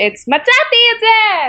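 very high-pitched screamed voice. Recalling a hebrew voiceover session, the speaker replays the recorded line: re-enacting a high-pitched scream. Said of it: "I'm just like screaming".

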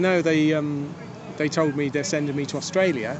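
normal talking voice

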